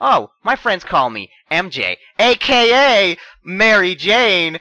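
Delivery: mock cheesy movie-style delivery. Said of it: "they would have been like".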